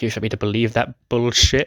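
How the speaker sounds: ordinary delivery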